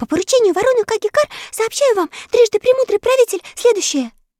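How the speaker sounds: panting, breathless, very high-pitched shout. A blue jay bringing urgent news to the ruler by bird post: breathless shout. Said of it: "прокричала запыхавшаяся сойка".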